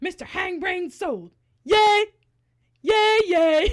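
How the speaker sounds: very loud, excited celebratory cheering. Imitating a man walking around after Mister Hank Brain sold at a celebrity auction, imitating someone getting excited. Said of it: "just walking around getting excited about Mister Hangbrain".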